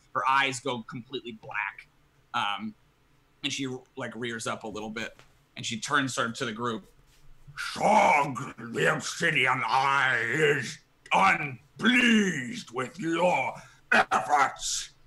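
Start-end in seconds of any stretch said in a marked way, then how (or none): 7.6-14.9 dreadful, horrible, possessed monster voice, dragged very slow. Voicing a possessed professor addressing the group: horrible, awful monster voice. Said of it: "just horrible, awful voice".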